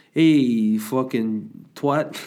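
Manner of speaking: loud Italian mother voice. Speaker recounting his mum arriving when too many people were coming, imitating a typical italian mother. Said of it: "typical Italian mother comes around".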